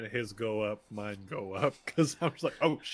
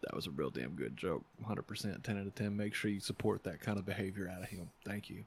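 sneaky, secretive, hushed, stealthy aside; 3 semitones lower, 9 dB quieter than usual. Leaning over to Otto, trying to be stealthy, speaking real quiet. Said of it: "real quiet because I'm trying to be stealthy".

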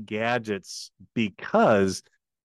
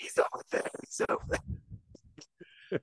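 soft whispered attempt at yelling. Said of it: "He was trying to, like, yell".

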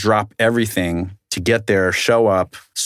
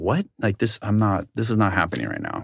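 acted fired-up, boiling-over, fuming outburst; 6 dB quieter than usual. Retelling being turned away at a client's door: retelling being furious.

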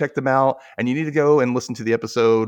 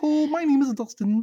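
put-on frog puppet voice, much higher. Showing friends their take on the puppet frog: Kermit the Frog voice. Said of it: "That's disturbingly good".

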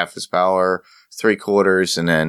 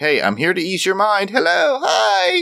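put-on very high, swooping, bouncy girly voice; 14 semitones higher than usual. Voicing the goddess Teruwet greeting someone: high-pitched girly voice. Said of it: "that high-pitched girly voice".

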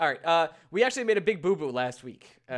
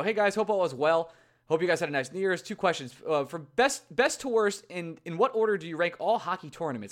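ordinary delivery

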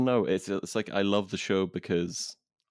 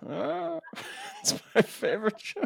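put-on very high, slow, crackly, creaky, frail old-woman voice. Acting out a friend in twenty years as an old frail woman: old frail woman voice. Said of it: "some old frail woman".

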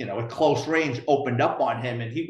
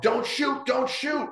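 mock screaming, much higher pitch; 11 semitones higher than usual. Telling a story about coworkers inside an apartment, retelling a scream. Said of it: "screaming in the apartment".

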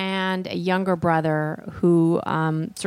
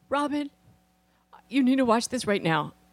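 put-on choked-up voice, higher, holding back tears; 6 semitones higher than usual. Retelling how Tony called someone to watch, imitating Tony holding back tears. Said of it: "trying to hold it together".

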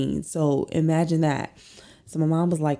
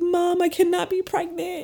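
crying in a very high-pitched voice; 14 semitones higher than usual. Recounting a urine test, acting out past self speaking to mom; imitating themself crying. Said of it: "I'm like crying".

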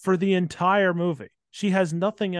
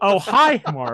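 loud, raised voice with awkward, odd timing; 3 semitones higher, 7 dB louder than usual. Mocking a film's bad dialogue after someone compares it to Tommy Wiseau dialogue: Tommy Wiseau voice. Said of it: "It's kinda like Tommy Wiseau dialogue".

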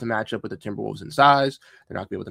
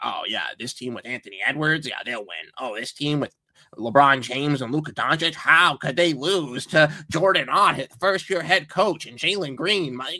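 put-on derisive, mocking send-up voice; 4 semitones higher than usual. The speaker mimics what people say about the team's chances: mocking impression of other fans. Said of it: "I love your impression of these other fans".

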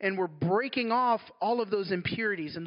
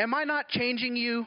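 authoritative, commanding tone with total authority; 4 semitones higher than usual. Retelling what God said in prayer: God's authoritative voice. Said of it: "in his authoritative voice".

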